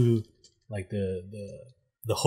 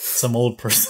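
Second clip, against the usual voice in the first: usual speaking voice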